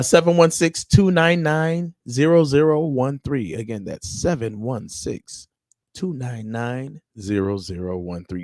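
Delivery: radio announcer on-air host voice. Speaker giving listeners the call-in number, in his radio voice. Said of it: "I had to put my radio voice on real quick".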